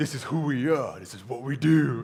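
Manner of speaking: put-on macho tough-guy movie-style voice. Discussing a film scene for young men, the speaker imitates a deep man voice. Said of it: "With his deep man voice".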